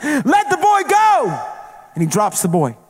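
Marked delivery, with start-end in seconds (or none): 0.0-1.5 very slow, high, drawn-out commanding shout. Recounting a dream, the speaker re-enacts chasing a creature carrying a boy, retelling a scream. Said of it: "And I'm running".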